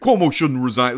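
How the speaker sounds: put-on faint, borderline Italian accent. Showing what kind of voice this one was, do a Cuomo-esque voice. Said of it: "this was like a Cuomo-esque voice".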